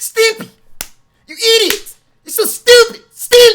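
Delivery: shrieked very high at full volume. Someone asks for the Ren voice, and the speaker performs it: Ren voice. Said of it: "Can you do that Ren voice".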